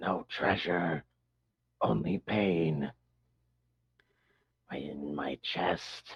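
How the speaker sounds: soft, rasping, hoarse creature voice. Voicing a creature's reply to the group looking for a vein to mine, rasped voice. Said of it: "reply in a kind of rasped voice".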